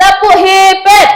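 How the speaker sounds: high, slow, loud cheer call. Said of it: "kita kasih yang namanya tepuk hebat".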